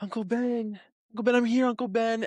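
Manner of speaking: mock tearful wail, very high, pleading. Retelling a movie scene where Peter reaches his shot uncle: imitating Peter crying. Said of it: "and he's crying".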